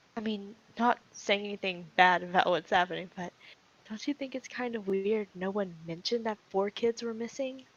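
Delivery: very quiet voice. Leaning over to Rofaris so only she hears: speaking very quietly. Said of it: "very quietly to where she only hears him".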